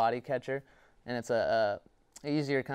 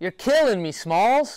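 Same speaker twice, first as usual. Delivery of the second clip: very loud, high, belted-out yell; 9 semitones higher, 11 dB louder than usual. Answering a request for a favorite movie quote: Sandlot impression. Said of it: "give us your best Sandlot impression".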